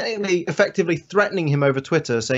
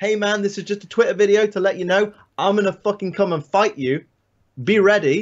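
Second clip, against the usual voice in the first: acting pumped up, fighter voice, higher; 3 semitones higher than usual. Acting out a threat video from a car: imitating a pumped-up fighter. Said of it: "you're pumped up".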